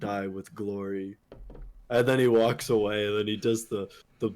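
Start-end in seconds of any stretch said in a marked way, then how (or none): 0.0-1.2 very soft, quiet, sorrowful voice. Speaker retells a game character's reply to another, in mock-sad Reinhardt voice. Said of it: "Reinhardt goes like with the sad voice".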